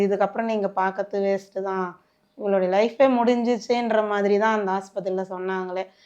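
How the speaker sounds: ordinary delivery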